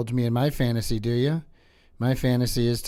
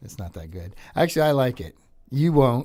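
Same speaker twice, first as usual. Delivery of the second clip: ordinary delivery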